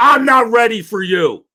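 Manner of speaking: play-acted very high, slow, snippy voice with attitude. Retelling how a producer brushed off a request: imitating Pat Egan with attitude. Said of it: "with an attitude".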